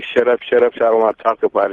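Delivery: plain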